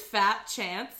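ordinary talk

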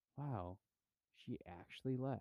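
put-on very surprised tone. Retelling a story, the speaker voices the drunk husband, acting out very surprised reaction. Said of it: "very surprised that she did".

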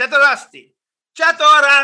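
very loud, very high, agitated, mad shouting. Retelling greeting an audience that only stares back, the speaker retells a yell. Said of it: "I start yelling at the audience".

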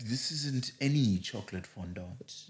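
very soft, slow, deep voiceover voice. Mocking a food advert, the speaker does the Marks & Spencer advert voice. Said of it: "old oh boy with the slow deep voice".

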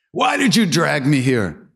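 very high, swooping yell. Telling how a devotee yelled at his guru across the courtyard, retelling a yell. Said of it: "he starts yelling at Maharaji".

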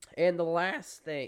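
loud voice breaking mid-phrase. Sports news host moving to the last item, voice cracking. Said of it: "voice cracked there".

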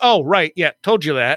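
ordinary talk, nothing marked

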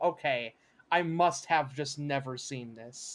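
ordinary talk, nothing marked

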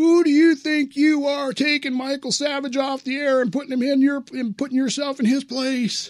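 shrill, very high, screaming, yelling rant. Telling Bill about a guy who screamed at him by the elliptical, retelling a guy yelling. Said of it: "he's yelling at me".

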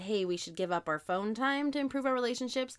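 ordinary delivery

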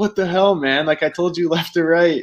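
put-on high-pitched child hollering. Retelling someone's reaction after the putt went in: imitating someone yelling. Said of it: "he's yelling at me after".

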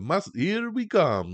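put-on very high pitch with slight Italian accent. Showing a listener how the accent sounds in a movie, as Mario with a slight Italian accent. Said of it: "a little slight Italian accent".

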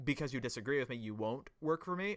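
normal talking voice

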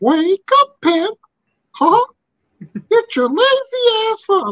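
very high and slow. Retelling an episode's voiceover bit: Mickey Mouse voice. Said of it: "Mikey Whipwreck doing Mickey Mouse".

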